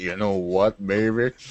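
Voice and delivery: voice dropped into a low baritone register. Mimicking how another speaker just said a line: imitating Dallin's baritone. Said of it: "He's like".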